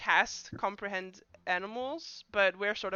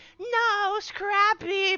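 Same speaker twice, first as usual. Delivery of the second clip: sad, mournful, very high and loud voice; 13 semitones higher, 6 dB louder than usual. Voicing the mage as her pet dies: sad Harley Quinn voice. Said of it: "the voice of Harley Quinn just going".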